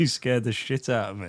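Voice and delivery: ordinary talk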